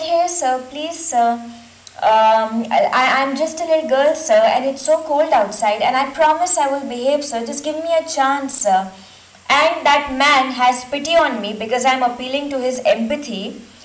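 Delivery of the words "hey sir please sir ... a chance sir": ordinary delivery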